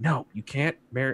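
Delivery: hushed but very firm. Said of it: "you hear it being like".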